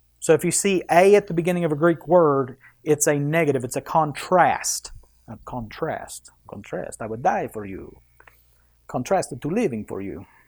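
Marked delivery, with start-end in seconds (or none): 7.0-10.2 low, hushed, quiet vampire voice. Explaining a Greek word to listeners, Dracula voice. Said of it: "Now I sound like Dracula".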